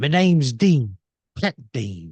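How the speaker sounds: loud, suave, put-on British accent. Retelling how she teased him about his dreams, mock British accent. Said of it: "she goes in a British accent".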